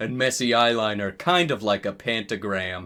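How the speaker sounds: ordinary delivery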